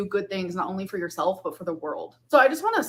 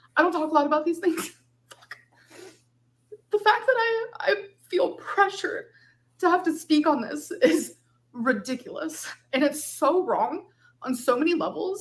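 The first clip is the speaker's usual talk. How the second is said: emotional voice, pitched up; 8 semitones higher than usual. Feeling pressured to speak out on something they find unfair: emotional. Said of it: "I'm getting emotional".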